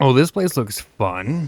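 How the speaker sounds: heavy sarcastic irony, clearly not meant, swooping sing-song. Reacting to a new place that looks full of puzzles: sarcastic.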